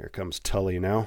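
ordinary delivery

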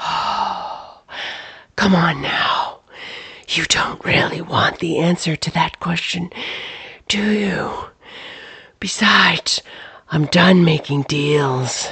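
ghostly, eerie whisper from all around. Narrator voices a disembodied presence answering Clyde in a dark barn, disembodied whisper. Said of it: "A disembodied voice swooped forward from out of the inky void, pressing Clyde back against the wall of the barn. It came from all directions, and yet it was only a whisper. / [name]? / and yet it was".

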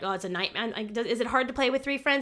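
plain

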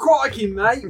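put-on Australian accent. Player says they're British now, then slips into a fake Australian accent. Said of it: "Oh, that's Australian".

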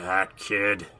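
grumpy, grumbling muttering. Doug's dad turns from the grill to see his son, grumbling. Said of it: "he grumbled".

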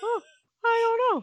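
very high-pitched, vague, clueless, flaky delivery. Imitating a doctor who answered a question: imitating a doctor sounding flaky. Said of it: "You sound so flaky".

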